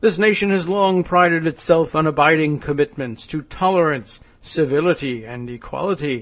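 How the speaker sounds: commercial announcer read, advertising pitchman delivery. Reading a politician's statement aloud, sounding like an advertising pitchman. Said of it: "I sound like a, a advertising pitch man".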